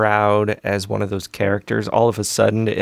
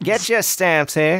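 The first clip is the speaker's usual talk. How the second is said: put-on old-fashioned Northeastern accent, pitched up; 9 semitones higher than usual. Showing how they call out selling stamps: early 1900s Northeastern accent. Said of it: "that early nineteen hundreds Northeastern accent".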